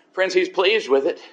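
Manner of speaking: normal talking voice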